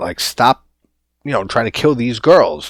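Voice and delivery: ordinary talk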